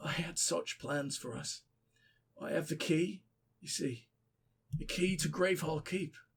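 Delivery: low, soft, dead-sounding voice.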